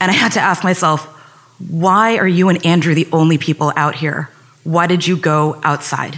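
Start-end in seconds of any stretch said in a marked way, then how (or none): none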